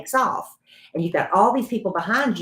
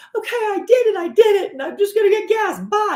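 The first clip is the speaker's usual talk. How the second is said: mock shouting, high-pitched yell. Retelling how a new driver finally reversed the car: imitating someone yelling. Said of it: "she's yelling at me".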